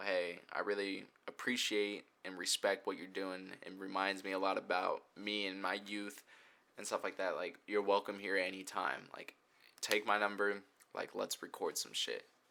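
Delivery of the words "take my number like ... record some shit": ordinary talk, nothing marked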